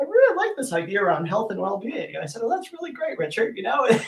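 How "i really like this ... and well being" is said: put-on British accent with sing-song, swooping pitch. Quote what Richard said to you several times throughout the day, in Richard's British accent. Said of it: "in his British accent".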